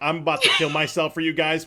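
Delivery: imitated deadpan, dry humorous delivery. Imitating a performer's line to the crowd: imitating Noah Royak's deadpan. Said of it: "this deadpan sense of humor".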